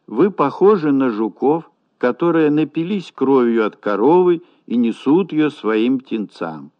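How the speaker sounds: plain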